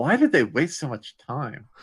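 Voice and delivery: muttering under breath. Muttering a remark in character about the Flutter Pony: muttering under breath. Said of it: "saying it under my breath".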